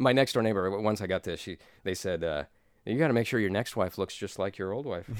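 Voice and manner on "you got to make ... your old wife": usual speaking voice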